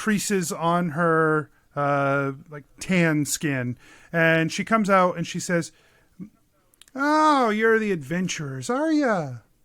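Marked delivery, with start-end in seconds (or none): 6.9-9.3 put-on elderly woman's voice. Game master voicing a woman greeting the adventurers, in an older woman voice. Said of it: "an older woman".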